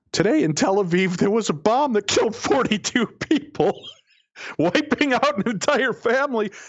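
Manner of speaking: put-on high, laughing speech. Recounting reading the next story on air, retelling reading through laughter. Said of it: "I couldn't stop laughing as I'm reading".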